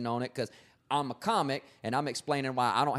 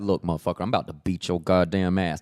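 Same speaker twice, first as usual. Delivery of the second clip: put-on restrained threatening anger, lower and louder; 6 semitones lower, 7 dB louder than usual. Showing how a real angry person first threatens: demonstrating calm unshouted anger. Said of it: "You don't start screaming till later".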